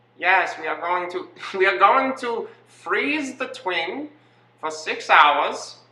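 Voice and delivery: high, slow, terrible German accent.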